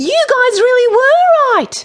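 very high, loud, forced-cheerful jovial shout. Michael addresses the other children in front of the Sea Queen: shouted. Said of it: "he shouted".

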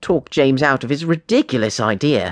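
ordinary delivery

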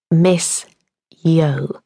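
slow, crystal-clear enunciation, fairly quiet. A new teacher repeats her name to a puzzled little boy, enunciating slowly and quietly. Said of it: "Evie enunciated slowly, in what she hoped was a quietish but crystal clear voice".

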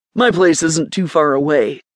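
plain reading voice

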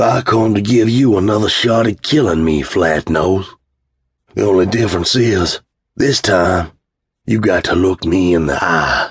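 calm, unhurried, easy, slow drawl. Bo confronts flatnose face to face, in a calm drawl. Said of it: "as he calmly drawled".

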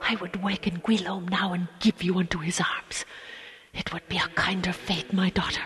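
soft, hushed whisper. Reading a man answering a woman he calls his daughter, whispering. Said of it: "he whispered".

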